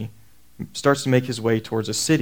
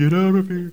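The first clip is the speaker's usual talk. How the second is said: eerie, high, spooky ghost voice; 7 semitones higher than usual. Retelling a voice the speaker thought they heard, spooky ghostly voice. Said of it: "in a spooky".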